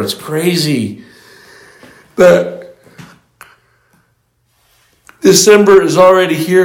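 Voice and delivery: words stretched by a yawn. Giving a spoken message to listeners, yawning while speaking. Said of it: "Sorry, I'm yawning".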